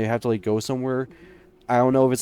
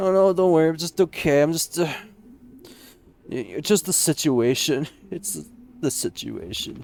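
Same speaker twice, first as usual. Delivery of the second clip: choked up, tearful, speaking through tears; 4 semitones higher than usual. Playing Anya, answering a question about whether she is crying: crying while talking. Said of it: "Anya, are you crying?".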